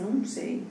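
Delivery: soft, timid, hesitant, unsure voice. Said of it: "Você fala assim".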